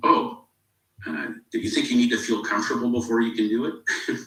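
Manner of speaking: wry, sarcastic voice. Retelling a man's reply to a lady uneasy about asking for money, mock-sarcastic question. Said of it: "kind of sarcastically".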